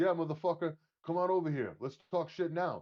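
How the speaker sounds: put-on heavy Brooklyn accent. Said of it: "he had that thick like Brooklyn accent".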